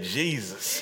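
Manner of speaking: earnest, said with sincerity.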